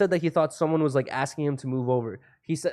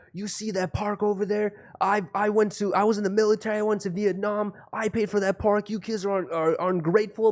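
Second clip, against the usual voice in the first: put-on man's yell, pitched higher; 6 semitones higher than usual. Retelling how a homeless man yelled at them in the park: imitating a man yelling. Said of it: "he just starts yelling at us".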